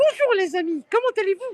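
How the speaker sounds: voice going way up, very high and loud. Offering to put on a show for the others, doing a Mickey Mouse voice. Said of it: "je fais Mickey".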